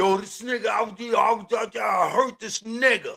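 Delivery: angry, heated ranting. Imitating how a man talks when he is mad: imitating him speaking angrily. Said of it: "when he's mad and he's saying it".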